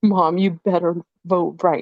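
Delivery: put-on upset voice. Retelling a son's warning about voting: imitating an upset son. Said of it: "he was, like, so upset".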